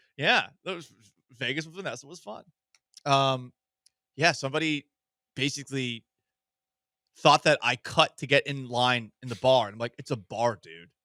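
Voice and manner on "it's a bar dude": low, mock patronising, condescending tone. To a man who thought he cut in line at a bar, retelling a condescending remark. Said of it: "I said it very condescendingly".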